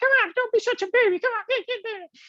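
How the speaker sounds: very high, upset head-voice falsetto. Retelling what Kamalaksha said to him, in Kamalaksha's falsetto voice. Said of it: "his voice goes falsetto. He, so he started going like".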